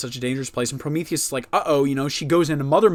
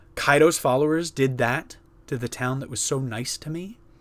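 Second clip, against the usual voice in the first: normal talking voice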